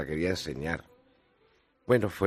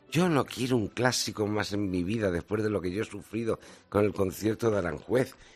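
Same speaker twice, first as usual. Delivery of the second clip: usual speaking voice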